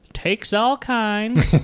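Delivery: put-on high-pitched old man voice, Maine accent. Discussing the Maine accent, speaker quotes a sketch line in Thomas Lennon's Maine accent. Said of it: "kind of like, I only know it from that state sketch".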